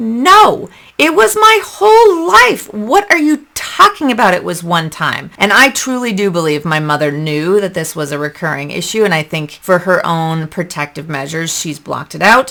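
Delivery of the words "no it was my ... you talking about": loud, high near-yell, pitched way up. Retelling answering their mother about past abuse, retelling a near-yell. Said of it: "I practically yelled at her".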